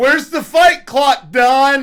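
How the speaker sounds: acted shout. Telling an audience how he screamed at Don, retelling a yell at Don. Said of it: "I yelled".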